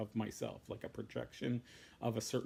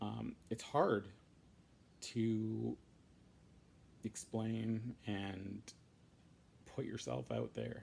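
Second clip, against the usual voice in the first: teary, tearing up, much slower. Speaker in a vlog talking about being honest, tearing up. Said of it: "I'm tearing up a little bit".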